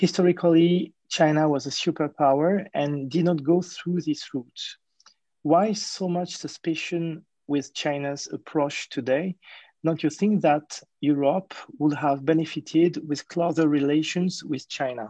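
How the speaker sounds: English spoken with a French accent.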